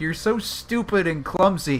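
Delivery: angry, berating, scolding outburst. Voicing Masaru scolding Nagito after everyone falls: yelling at someone. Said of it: "Masaru's yelling at Nagito".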